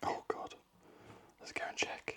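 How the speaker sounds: quiet whispering. Guessing the cutting angle and going to check the result, whispering. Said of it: "I don't know why I'm whispering".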